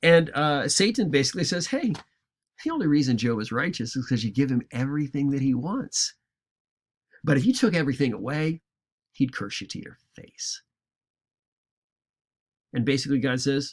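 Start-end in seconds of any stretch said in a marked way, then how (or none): 1.7-10.6 lightly sarcastic, casual, needling tone. Retelling Satan's reply to God, being sarcastic to make it funny. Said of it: "I'll be a little bit sarcastic with this to make it funny".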